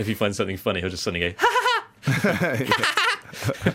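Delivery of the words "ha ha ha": very high, ridiculous cackling laugh. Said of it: "his laugh is ridiculous".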